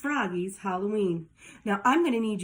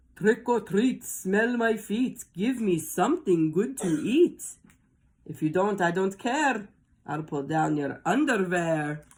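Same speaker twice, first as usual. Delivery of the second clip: put-on vampire count voice. Narrator reads Froggy's line, said in his best Dracula voice. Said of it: "said in his best Dracula voice".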